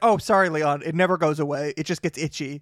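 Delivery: normal talking voice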